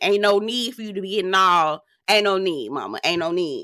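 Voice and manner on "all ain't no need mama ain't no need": ordinary talk, nothing marked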